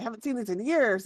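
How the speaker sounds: eager, excited, exclaiming dwarf voice. A storyteller retells what one character said to a companion on seeing some tools, retelling excited speech. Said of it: "in Dwarvish excitedly saying".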